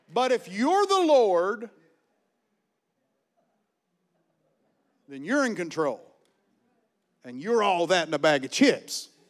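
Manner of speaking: sarcastic, mocking, swooping sing-song delivery. Speaker talking about giving back to God: sarcastic. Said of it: "I'm being sarcastic here".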